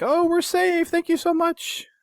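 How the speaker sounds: very high, mock-thankful voice. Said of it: "the Marines are like".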